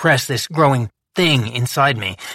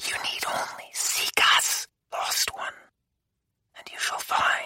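small, sinister, echoing whisper. A voice speaks inside the narrator's thoughts; small, sinister echoing voice. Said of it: "A small, sinister voice echoed through my thoughts at last, reverberating as if legion".

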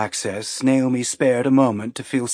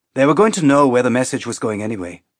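ordinary delivery

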